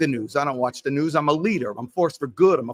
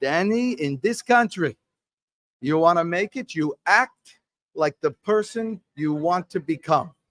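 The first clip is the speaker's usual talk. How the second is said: slow put-on French accent with Yiddish tinge; 2 semitones higher than usual.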